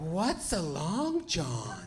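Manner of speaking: put-on swooping, very confused, bewildered old-lady voice. Retelling ordering a donut and an old lady's reply, in a confused old lady voice. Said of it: "a very confused, very old lady replying".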